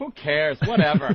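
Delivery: condescending, dismissive, who-cares tone. Acting out the other side of an argument, mock-condescending. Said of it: "That was the condescending part of the argument, where Opie would go".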